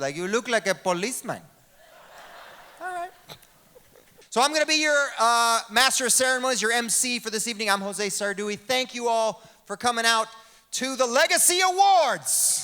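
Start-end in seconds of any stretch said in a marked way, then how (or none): 0.2-1.4 put-on Puerto Rican man voice. Retelling a Puerto Rican guy doubting the name: imitating a Puerto Rican guy. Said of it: "I met a Puerto Rican guy".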